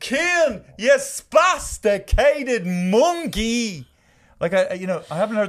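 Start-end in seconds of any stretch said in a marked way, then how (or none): 0.0-3.9 put-on child's loud shout, higher and louder. Retelling how a kid screamed at his younger sibling on the street: imitating a kid screaming. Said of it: "he shouts out the phrase at the top of his lungs".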